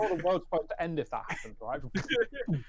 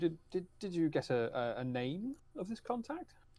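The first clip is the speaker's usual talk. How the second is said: slow, halting, hushed half-whisper; 2 semitones higher, 5 dB quieter than usual. Asking a companion in a pub about a contact: half-whispering. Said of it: "I'll whisper to you".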